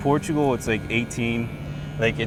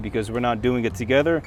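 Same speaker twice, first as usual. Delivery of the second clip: plain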